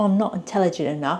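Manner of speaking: normal talking voice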